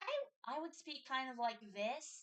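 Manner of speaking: high-pitched voice placed up in the head. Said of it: "like this high-pitched instead of like this".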